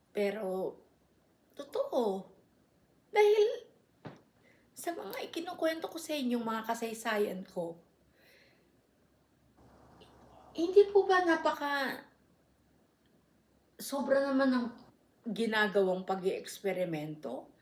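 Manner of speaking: on the verge of crying. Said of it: "naiiyak na naman ako".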